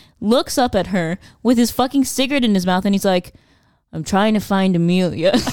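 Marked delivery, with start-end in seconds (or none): 3.9-5.3 mock deadpan, flat and emotionless. Recounting a film scene, quoting the man's reply to her, retelling a deadpan line. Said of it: "no emotion, deadpan".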